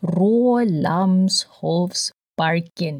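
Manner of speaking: slow, deliberate, carefully spaced-out delivery. Describing a park, saying its name slowly. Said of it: "I have to say it slowly".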